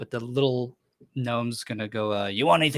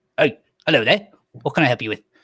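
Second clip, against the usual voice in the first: loud, little gnome cook voice; 7 dB louder than usual. Narrating a scene where a chef looks up from chopping and greets you, little gnome chef voice. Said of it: "the closest one is a gnome, a little man".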